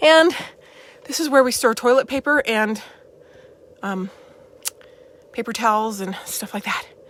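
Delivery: breathless, winded. Giving a tour of a hot upstairs storage area, out of breath. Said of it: "you can see I'm kind of like out of breath".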